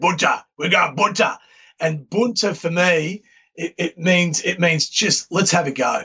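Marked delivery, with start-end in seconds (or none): 0.0-1.4 put-on, really deep voice. Explaining where his favourite word comes from, imitating Gary McIntosh's deep voice. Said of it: "he'd talk real deep voice".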